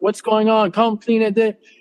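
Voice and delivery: plain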